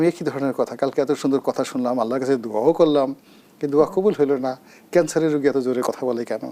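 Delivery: normal talking voice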